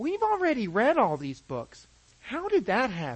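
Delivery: sweet, high, small sing-song voice with swoops. A father retells his daughter talking to herself, in her sweet little Elmo voice. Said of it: "in her sweet little Elmo voice".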